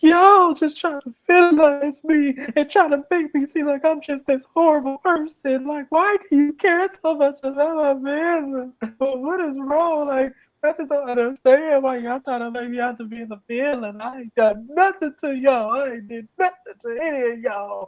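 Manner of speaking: very high, tearful, crying voice. Retelling a reality show scene where Robin cries when questioned: imitating someone crying. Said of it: "what the hell are you crying for?".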